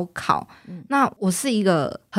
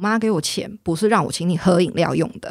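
ordinary talk, nothing marked

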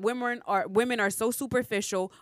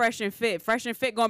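ordinary talk, nothing marked

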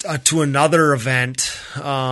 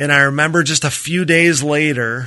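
ordinary talk

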